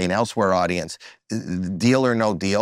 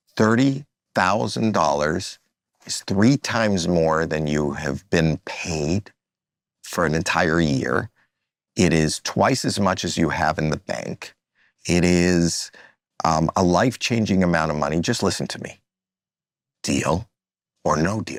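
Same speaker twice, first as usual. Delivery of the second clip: acted very slow, dead-serious delivery; 2 semitones lower than usual. Speaker re-enacts their own past delivery that others made fun of, retelling very slow serious talk. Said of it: "I would talk very slow".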